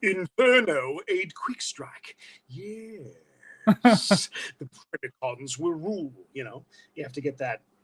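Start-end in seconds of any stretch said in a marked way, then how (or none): 0.0-6.1 very slow, drawn-out cartoon robot voice. Showing the voice they did for Susan Blue, Beast Wars character voice. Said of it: "Beast Wars impression".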